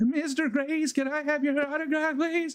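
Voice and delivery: acted very high, trembling, nervous, starstruck voice. Retelling asking a baseball player for an autograph, imitating own nervous shaky voice. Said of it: "my voice was shaking".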